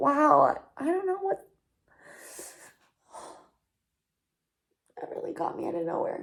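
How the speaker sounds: tearful, crying while talking. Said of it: "I literally can't even stop crying".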